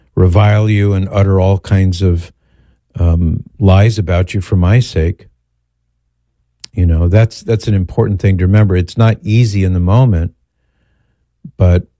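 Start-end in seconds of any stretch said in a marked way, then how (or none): none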